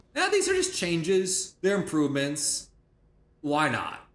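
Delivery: ordinary delivery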